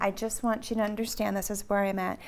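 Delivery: ordinary talk, nothing marked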